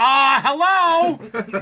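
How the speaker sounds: loud yell with a drawn-out hello. Speaker retells a man in a hallway yelling at a passing woman: retelling a yelled greeting. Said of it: "He yells at her".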